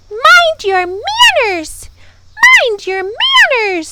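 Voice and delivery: very high, shrill, furious bird screech. Reading a story, voicing the wiffle bird disturbed by a shrieking mob: angry screaming bird voice. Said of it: "she screamed, ... in an angry voice".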